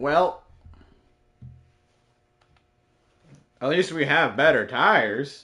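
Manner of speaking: mocking, ironic, sarcastic tone. After another failed attempt despite the better tires, sarcastic. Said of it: "Say sarcastically".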